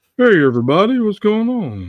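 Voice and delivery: loud, booming, swooping character voice. A player greets everyone in character, in a Hank Hill voice. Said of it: "sounds like the guy from King of the Hill".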